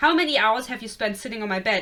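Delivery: plain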